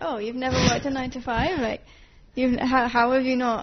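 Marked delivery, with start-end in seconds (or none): none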